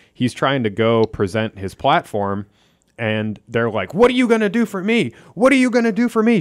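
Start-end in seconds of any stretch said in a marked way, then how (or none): 4.0-6.4 shrill, high, loud shout. Retelling a crowd confronting a candidate, imitating people shouting. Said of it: "shouting at him".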